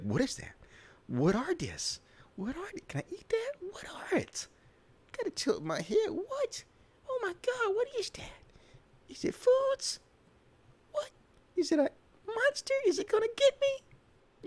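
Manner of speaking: very high, swooping, nosy little critter babble. Voicing the thoughts of a cute dog in a video: voicing a curious dog. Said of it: "He's just like".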